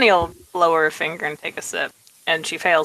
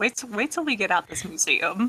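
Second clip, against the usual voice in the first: very playful, teasing, swooping sing-song; 4 semitones higher, 6 dB quieter than usual. Speaking in character as Tony, threatening the others: playful tone. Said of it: "it's in a very obviously playful tone".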